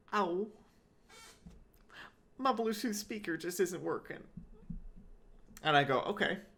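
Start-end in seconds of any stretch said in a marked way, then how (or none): 0.1-4.1 breathy, pitched-up put-on Utah accent. Quoting an old woman who came into the store, in her breathy Utah accent. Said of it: "she says in her breathy Utah accent".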